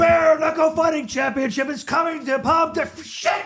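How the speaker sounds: high-pitched, shrill, screamed announcer voiceover. Retelling recording a voiceover in the basement: imitating own yelled voiceover. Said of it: "I'm yelling at the thing".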